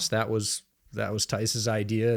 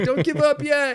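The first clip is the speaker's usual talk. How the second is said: mock sarcastic voice, higher and louder; 4 dB louder than usual. Retelling what fans in a bar said about the Jets: imitating sarcastic bar fans. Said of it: "they start saying sort of sarcastically".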